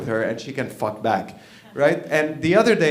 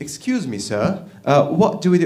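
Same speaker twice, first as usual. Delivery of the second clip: polite, put-on British accent; 2 semitones higher than usual. Telling a war story, the speaker voices the Japanese asking the Americans, British accent. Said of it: "He's British, by the way".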